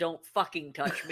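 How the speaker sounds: put-on, irritated, angry cat voice. Retelling the cat's reaction when the speaker took her bandage off, imitating a loud cat. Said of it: "she very loudly said".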